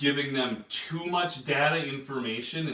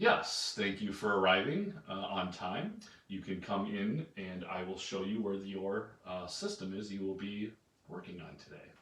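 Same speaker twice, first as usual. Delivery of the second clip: reserved, careful, exact and measured delivery; 6 semitones lower, 7 dB quieter than usual. Teaching personality types, acting out a C type greeting someone: imitating a reserved, precise C type. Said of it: "A C will be reserved".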